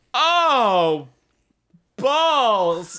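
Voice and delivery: high, slow mock delight. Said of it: "and you're just like".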